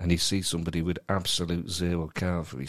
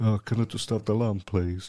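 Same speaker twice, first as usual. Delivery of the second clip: timid, meek put-on male voice, higher pitch; 3 semitones higher than usual. Showing how a timid diner asks for food: timid beta male voice. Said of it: "Don't stand there like a beta male and go".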